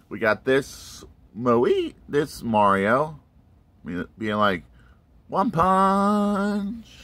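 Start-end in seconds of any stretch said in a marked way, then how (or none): 5.2-6.8 very high anime-style voice, "punch" held and drawn out. Voicing a Mario toy as an anime hero: impression from One Punch anime. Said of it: "I couldn't help that".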